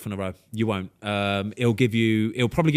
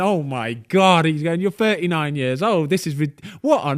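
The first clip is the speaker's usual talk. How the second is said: mock laughing while talking, much higher pitch; 6 semitones higher, 4 dB louder than usual. Recounting a man's reaction on a speakerphone call, imitating him laughing while talking. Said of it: "he's he's just laughing".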